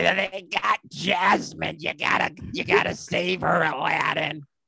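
terrible put-on cartoon parrot voice. Asked about Gilbert Gottfried's roles, a speaker tries his Aladdin parrot: terrible Gilbert Gottfried impression. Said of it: "a terrible".

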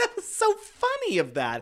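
very high, giggly, mocking squeal. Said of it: "and then just be like".

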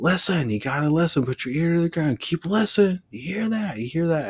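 loud high-pitched hollering.

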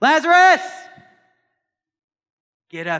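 high, loud ringing shout.

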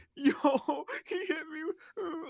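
very high, very slow sobbing. Retelling how a guy reacted after a kid hit him, imitating someone bawling. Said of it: "he starts bawling his eyes".

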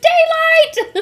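loud, high-pitched scream. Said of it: "seeing him screaming at a computer".

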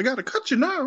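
very high-pitched, squeaky, deliberately bad cartoon mouse voice. Joking about Mickey showing up like one of the Peaky Blinders, terrible Mickey Mouse impression. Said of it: "the worst Mickey Mouse impression ever".

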